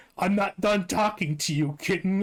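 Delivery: silly, stupid put-on anime character voice. Quoting a line from a Roblox meme, in a stupid anime voice. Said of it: "in like that stupid fucking anime voice".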